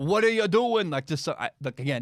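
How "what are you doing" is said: clumsy put-on New York accent, pitched up. Imagining angry fans at home: bad New York accent. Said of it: "I can't do a New York accent".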